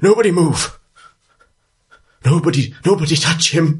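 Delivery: put-on very high, upset, distressed old man voice. Voicing an old man over a strange statue: distressed old man voice. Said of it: "this distressed old man looks up at you and says".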